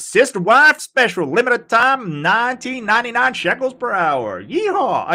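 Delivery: clumsy put-on southern accent. The speaker, for whom American accents are unnatural, attempts a bad southern American accent. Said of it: "I'm trying to do a southern voice".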